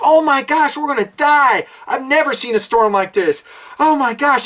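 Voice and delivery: high-pitched panicked wailing, falling-apart crying. Imitating a ship's captain panicking in a storm: imitating panicked crying. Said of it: "he's carrying on and crying".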